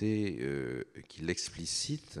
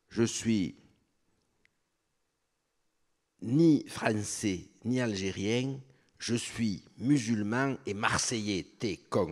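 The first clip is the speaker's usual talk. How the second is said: put-on accent of Marseille; 5 semitones higher, 5 dB louder than usual. Retelling a young man's answer to his question: imitating a Marseille accent. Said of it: "excusent mon imitation de leur accent".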